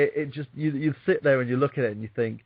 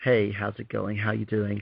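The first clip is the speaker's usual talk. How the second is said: put-on standard, general American accent; 4 semitones lower, 3 dB quieter than usual. Speaker explaining accent work, demonstrating the general American accent they put on. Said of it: "what I'm putting on is a general American accent".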